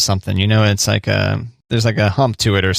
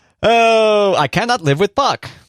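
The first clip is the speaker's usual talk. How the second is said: very high reality-star voice, drawn out; 11 semitones higher than usual. Impersonating Pedro from a reality TV show: impersonation of Pedro. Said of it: "That's my impersonation of Pedro".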